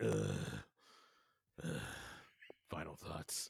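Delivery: rough, very low, creaky grunting. Grunting the show out, impersonating Rob Masters: grunting Rob Masters impression. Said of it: "my impersonation of Rob Masters doing an impersonation of me".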